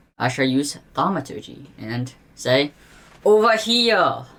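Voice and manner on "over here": booming, pitched-up, amplified-sounding shout. Player's character uses thaumaturgy to call out to others: booming voice. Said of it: "with through a booming voice".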